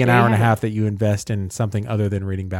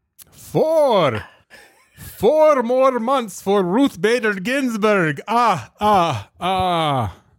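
put-on vampire voice; 12 semitones higher than usual. Counting in a vampire voice with laughs: Count Dracula counting voice. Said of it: "Count Count Chocula".

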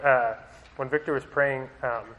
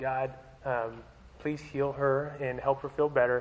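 quiet, mumbled, soft, hushed stage whisper; 6 dB quieter than usual. Recalling praying into a girl's ear as she sat in the speaker's lap: retelling a quiet half-whisper. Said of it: "I was trying to like whisper quietly in her ear".

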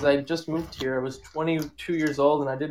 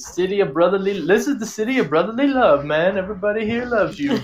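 put-on Jamaican accent, raised and high-pitched; 5 semitones higher, 5 dB louder than usual. Retelling what a cab driver said to them: imitating a Jamaican cab driver. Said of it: "this Jamaican dude, and he's like".

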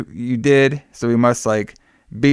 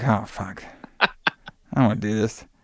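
put-on bored tone, quieter; 6 dB quieter than usual. Telling a story about a guy dress shopping with his wife, imitating a bored guy. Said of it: "this guy looks so bored".

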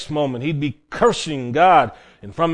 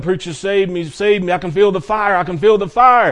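frantic screaming and yelling; 4 semitones higher than usual. Retelling a dying man's pleas to the preacher: imitating a man screaming. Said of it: "he's screaming and yelling".

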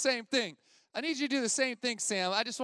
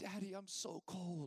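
put-on crying child voice, quieter; 5 semitones lower, 15 dB quieter than usual. Retelling his five-year-old daughter's words on a cold morning: imitating a crying child. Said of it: "my daughter immediately started crying".

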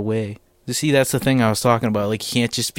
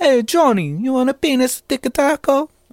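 put-on very high-pitched grandmotherly voice; 14 semitones higher, 4 dB louder than usual. Acting out a grandma offering Johnny food, imitating a grandma. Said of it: "sounds just like my grandma used to make".

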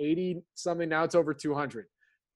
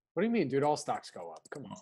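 swooping, fake-serious sarcastic tone of mock disbelief; 3 semitones lower, 4 dB quieter than usual. Answering a joke about picking stocks instead of the market: sarcastic. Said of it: "That's sarcasm for people who don't know".

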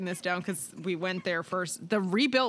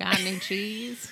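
put-on nerdy sitcom-style kid voice. Asked what they would say, the speaker does an Urkel impression. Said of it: "got you to do an Urkel impression".

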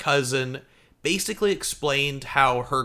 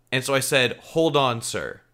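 usual speaking voice

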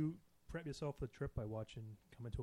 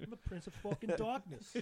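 bad, high-pitched impression with a Boston accent; 8 semitones higher than usual. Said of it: "That is terrible. If [name] was from Boston".

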